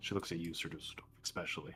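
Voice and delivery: ordinary delivery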